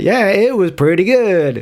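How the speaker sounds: slow, drawn-out, odd way of talking. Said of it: "I'm gonna stop talking like this".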